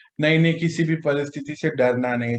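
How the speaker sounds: ordinary talk, nothing marked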